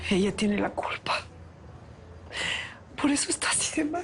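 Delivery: high-pitched, sobbing, crying voice. Blaming the woman who tormented Lázaro, sobbing.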